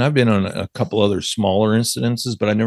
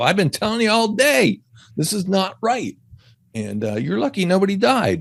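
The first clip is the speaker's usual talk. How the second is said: acted, shrill, high-pitched, swooping screaming; 10 semitones higher than usual. Retelling confronting the bosses after the collapse: retelling screaming at them. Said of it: "I was screaming at 'em".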